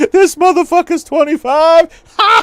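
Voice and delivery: acted, shrill, booming, drawn-out cackle, very high, loud. Retelling how another character burst out laughing: imitating someone laughing. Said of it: "I'm just picturing him laughing like a motherfucker".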